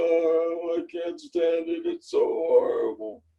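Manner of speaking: slow, swooping, gloomy and dejected tone. Explaining how voice tone affects mood, demonstrating a depressing tone. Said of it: "talk to yourself in a depressing tone of voice".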